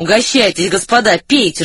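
plain reading voice

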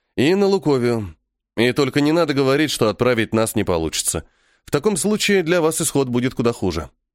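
ordinary delivery, nothing marked

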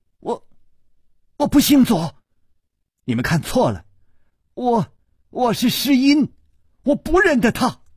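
sudden loud shouting. Narrating a novel, voicing a young lady who suddenly cries out; suddenly shouting loudly. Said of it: "左姑娘忽然大叫".

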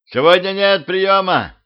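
bellowed, high, shrill yell. The narrator waving his arms at an approaching ghost, yelling. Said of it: "заорал я".

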